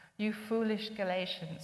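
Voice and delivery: ordinary talk, nothing marked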